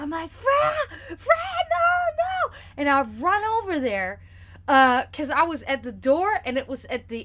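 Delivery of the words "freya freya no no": very high, drawn-out, panicked, frightened scream. Retelling running across the yard calling out a name, reenacting a scared scream. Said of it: "I'm just screaming".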